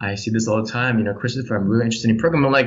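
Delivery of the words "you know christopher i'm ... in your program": mock lifeless, dull, no-enthusiasm read. Imitating people who claim passion without showing it: imitating an unenthusiastic speaker. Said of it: "you don't sound it".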